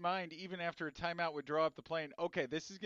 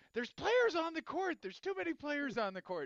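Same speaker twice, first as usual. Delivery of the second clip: mock shrill scream, very high; 10 semitones higher than usual. Retelling watching the game with a crowd, unaware of the timeout, reenacting own screaming. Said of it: "but I was screaming".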